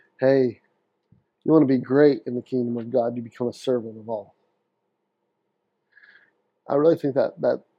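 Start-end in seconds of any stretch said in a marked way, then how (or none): none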